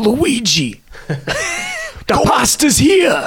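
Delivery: very high, slow, drawn-out, swooping character voice. Retelling a line from the live-action Mario show: imitating Mario. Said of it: "he'd be like".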